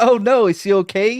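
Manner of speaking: put-on, high, giggly, concerned-sounding voice. Acting out someone's reply to sad news, imitating a giggly reaction. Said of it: "you hear that news and you're like".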